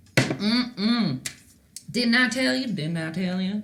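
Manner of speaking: slow, sassy put-on frog voice. Voicing a painted frog with no hands: sassy frog voice. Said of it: "That's exactly what that frog's saying".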